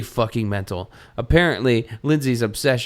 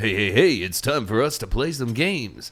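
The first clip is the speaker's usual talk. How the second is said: fake, forced cheery radio-host patter. Joking about a book like a bad radio show, forced happy voice. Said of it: "Can you tell I'm using my forced happy voice?".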